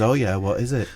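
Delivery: ordinary delivery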